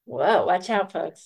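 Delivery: playful ribbing tone. Responding to someone who just shared what enlightened them, teasing. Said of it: "I'm teasing".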